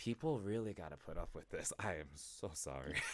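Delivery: low, soft, sheepish, apologetic tone.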